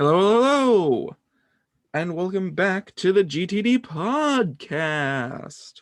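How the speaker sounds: unenthused voice. Opening the podcast intro while tired and out of it: unenthused voice. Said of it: "I don't sound particularly enthused today".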